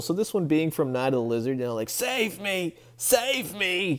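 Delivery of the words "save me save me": high, very slow, cartoonish pleading tone. Recalling the tunnel worker from Night of the Lizard: imitating the tunnel worker's cry. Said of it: "That guy".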